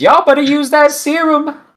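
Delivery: very high, shrill, loud hollering. While leaving, calling out to the farmers, yelling. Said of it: "I yell to these farmers".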